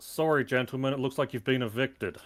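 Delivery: bold, proclaiming delivery to a room. Waltzing into a room in character, announcing to the gentlemen: loud announcement. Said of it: "I'm going to rather loudly announce".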